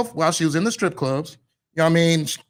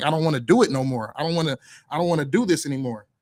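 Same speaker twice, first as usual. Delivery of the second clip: put-on tearful voice; 3 semitones lower than usual. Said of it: "So she's crying. She's just like".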